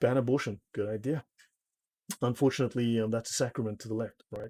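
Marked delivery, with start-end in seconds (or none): none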